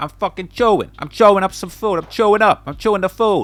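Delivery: loud, put-on Brooklyn accent, "chew" said like "cho". Mimicking how New Yorkers say a word, in a Brooklyn accent. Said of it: "Brooklyn accent".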